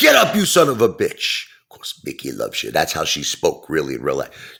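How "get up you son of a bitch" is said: loud, high-pitched, tough-trainer yell. Describing a tough grandmother, the speaker quotes Mickey from Rocky; imitating tough Mickey. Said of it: "She had that real toughness about her".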